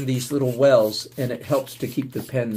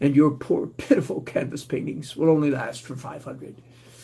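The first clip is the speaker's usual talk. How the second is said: mocking, snobby, pretentious artist-type voice; 2 semitones higher than usual. Mocking art snobs by imitating one: imitating an art snob. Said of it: "art snobs".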